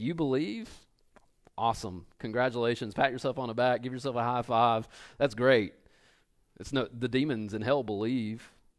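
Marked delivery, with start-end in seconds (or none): 0.0-5.7 lightly sarcastic, fake-enthusiastic tone. Acting out James's reply that even demons believe: imitating James being sarcastic. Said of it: "There's a little sarcasm there".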